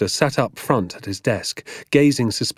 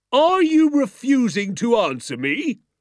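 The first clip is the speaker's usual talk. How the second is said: very high-pitched, slow, drawn-out shout; 14 semitones higher than usual. A man demands an answer from a boy who stands silent, shouting. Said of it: "he shouted".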